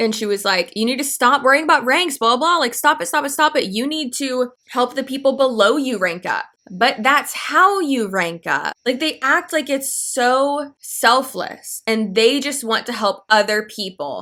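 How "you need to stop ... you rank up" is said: mock, fast, rattled-off ranting harangue. Retelling a girl who screamed at them, imitating someone screaming. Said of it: "literally screaming at us".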